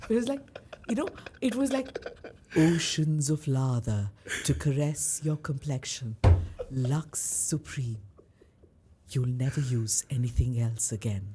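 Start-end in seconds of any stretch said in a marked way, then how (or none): 2.5-11.3 very low, deep commercial voiceover read. Recalling wanting to talk like the woman who voiced Lux ads; Lux ad voiceover voice. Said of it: "I want to talk like her".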